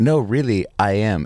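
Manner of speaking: ordinary talk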